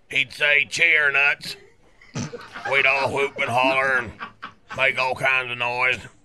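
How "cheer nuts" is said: ordinary talk, nothing marked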